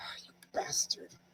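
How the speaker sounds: whispered mutter under the breath. Reacting with others to a voice whispering in your ear, muttered under breath. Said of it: "I want to just mutter under my, under my breath".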